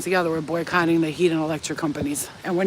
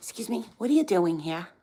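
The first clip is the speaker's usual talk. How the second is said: put-on New Jersey accent, nosy and prying tone; 5 dB quieter than usual. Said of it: "you know how they talk".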